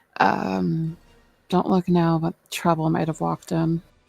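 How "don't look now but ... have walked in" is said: rushed, secretive, confiding delivery. A role-player leans forward and speaks to the group at the table, hushed voice. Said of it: "voice hushed".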